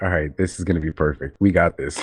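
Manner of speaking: ordinary talk, nothing marked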